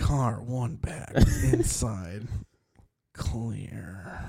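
gentle hushed soothing voice. Claiming a calm voice, the speaker does race spotter calls: soft calm ASMR voice. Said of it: "Spotter ASMR".

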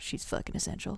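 muttered under breath. Reading an anonymous story about a remark overheard in a line, muttered to oneself. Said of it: "I muttered to myself".

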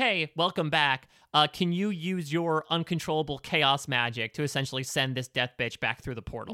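usual speaking voice

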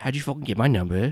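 put-on, fake British accent. Retelling what the man said when she reached him: fake British accent. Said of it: "in a fake British accent".

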